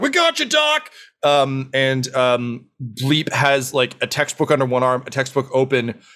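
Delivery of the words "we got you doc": very high, shrill, rallying shout. Voicing Nev bursting into the room: yelling. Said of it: "just yelling".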